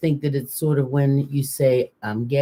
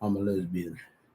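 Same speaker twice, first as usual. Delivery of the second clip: put-on deep, low voice, very soft and quiet; 6 semitones lower, 9 dB quieter than usual. Told to say the line with a deep voice, in a put-on deep voice. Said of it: "you have to say it with a deep voice".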